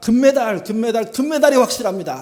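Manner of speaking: overjoyed, ecstatic, very loud shout near tears. Recreating another broadcast team's gold-medal call, retelling an ecstatic tearful shout. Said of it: "열광하면서 소리치면서 울음이 섞인 감격의 목소리로 말합니다".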